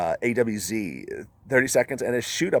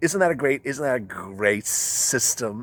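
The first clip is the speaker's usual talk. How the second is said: sarcastic delivery, words drawn out; 3 semitones higher than usual. Complaining about credit checks that lead to denials: sarcastic. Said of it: "I'm saying that sarcastically".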